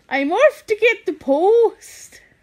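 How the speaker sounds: put-on Geordie accent. Trying out accents with the others, the speaker says a line in a Geordie accent.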